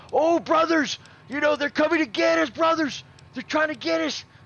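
very high, fake, put-on American accent. Retelling how a British guy made fun of them, in a fake American accent. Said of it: "he's trying to sound American".

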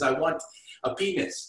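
slow, drawn-out put-on French accent. Retelling a funny movie line spoken by a french lady: imitating a french lady's accent. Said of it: "that French lady in her accent says".

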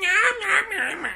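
put-on very high, silly, goofy old lady voice. Playing an anime director, the speaker tries out an old lady voice. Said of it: "What would an old lady sound like?".

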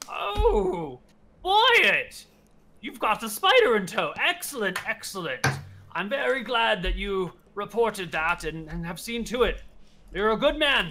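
put-on high elderly lawman voice. The storyteller voices the sheriff greeting wyatt and the party: elderly sheriff voice. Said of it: "The sheriff is an elderly gentleman. He's got to be at least like 85 years old".

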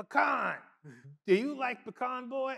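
put-on shrill, high, loud, booming old man voice. Speaker retells what an old man asked him about the wood, imitating an old man.

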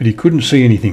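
ordinary delivery

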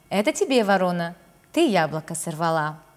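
ordinary delivery

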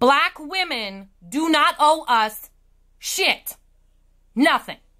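slow, precise, deliberate, carefully enunciated articulation. Replying to a commenter about the original video, enunciating very clearly. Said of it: "let me enunciate very clearly".

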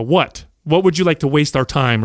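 sarcastic, snarky, dismissive tone. Retelling a teacher's reply in class, imitating a snarky teacher. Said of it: "He was, like, real snarky".

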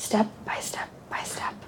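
soft, whispered, coaxing, guiding tone.

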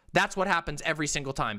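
normal talking voice

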